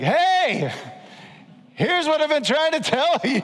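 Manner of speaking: high, loud, booming yelled deity voice.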